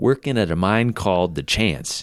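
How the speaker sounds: plain reading voice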